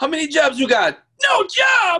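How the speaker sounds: shrill, very high, shouted, put-on Jamaican accent. Quoting a sketch from In Living Color: In Living Color Jamaican family impression. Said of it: "remember them from In Living Color, the Jamaican family".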